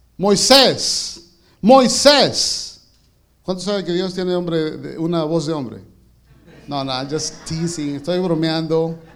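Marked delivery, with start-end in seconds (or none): 0.2-2.8 very loud, high-pitched calling out. Preacher reading Exodus voices the Lord calling from the bush: loud calling out. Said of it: "yo quería decirlo más fuerte".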